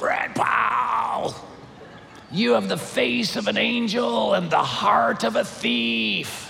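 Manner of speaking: very slow, creaky demonic rasp, thief stretched out. Retelling what a woman said to the speaker in a church lobby, in a demon-possessed voice. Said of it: "the voice of like a demon-possessed human being".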